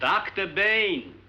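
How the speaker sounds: high, slow, loud shout. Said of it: "There's no need to shout".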